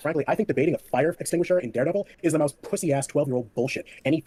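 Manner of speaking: ordinary delivery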